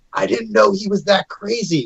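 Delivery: whispered in an acted voice. Whispering into Poe's ear in character: whispering in character. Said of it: "I'm gonna go to whisper into Poe's ear".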